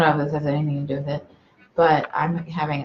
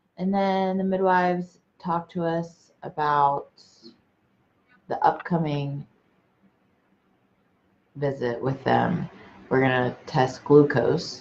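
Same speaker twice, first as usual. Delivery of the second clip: very slow, careful delivery. Telling about the midwives' upcoming visit, talking really slowly. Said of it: "I've never seen you talk so slow".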